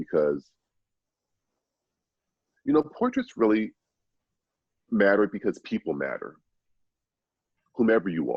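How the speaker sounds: choked-up, emotional voice. A speaker talking about why portraits matter, choked up. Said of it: "I'm still choked up by this".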